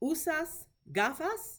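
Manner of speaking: pitch climbs upward on the word gafas. Spanish lesson asking do you wear glasses, rising pitch on gafas. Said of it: "you hear how my voice goes up at the end of the sentence".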